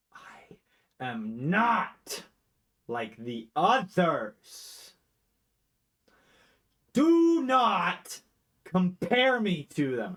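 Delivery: booming, drawn-out, barely contained simmering rage, loud and slow. A haunting voice answers being asked what its deal is, with simmering rage. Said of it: "You can feel like rage simmering".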